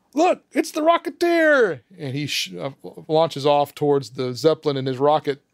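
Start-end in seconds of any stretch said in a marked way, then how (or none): 0.1-1.8 high-pitched crowd of voices yelling. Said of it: "and they all yell".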